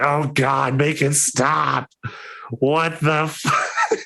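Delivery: agonized, very high, slow, drawn-out pained screech. Voicing a book's voice screeching from inside the head: pained screech, crying out in pain. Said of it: "crying out in pain".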